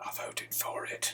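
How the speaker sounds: very slow, hushed, leaning-in whisper. Retelling what a friend leaned in and said: imitating a whisper. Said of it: "And he whispered it".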